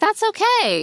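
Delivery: very high, put-on bright, cheerful, soothing voice. Retelling how he answered her apology: imitating a cheerful, reassuring tone. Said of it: "in this really cheerful, reassuring way".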